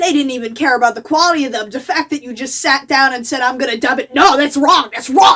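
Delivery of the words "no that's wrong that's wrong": loud, insistent voice. Speaker mocking people who object to anime dubs: impression of friendless anime fan. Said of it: "that's my impression of a no friends anime fan".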